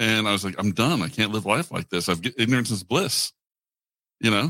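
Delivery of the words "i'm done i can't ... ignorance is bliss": ordinary delivery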